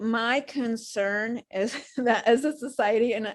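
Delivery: slow speech broken up by laughter. Sharing a concern in a conversation, laughing while talking. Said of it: "I'm sorry I'm laughing".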